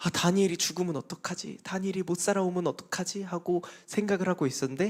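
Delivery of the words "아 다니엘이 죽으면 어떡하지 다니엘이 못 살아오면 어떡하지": worried, anxious fretting voice. Retelling the story for children, voicing the king: acting out the king's worry. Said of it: "원래 다리오 왕은 걱정이 많았어".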